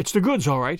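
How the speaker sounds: plain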